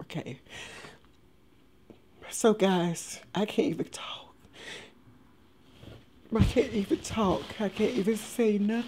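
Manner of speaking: whispering, breathy, tearful, on the edge of crying. Opening a video to tell viewers about a dog, starting to cry. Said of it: "I'm starting to cry already".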